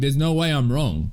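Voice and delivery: mock proud, prideful tone. Mocking how his pride refused to admit being wrong: mocking his proud denial. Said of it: "your pride was like".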